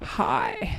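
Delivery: croaky vocal fry, breathy and airy. Imitating how some American girls speak: imitating a croaky voice. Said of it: "that croaky voice thing".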